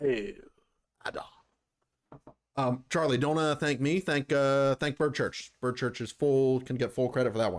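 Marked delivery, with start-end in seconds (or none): 0.0-1.2 voiced like an orc. Doing an orc impression: orc impression. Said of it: "My orc impression?".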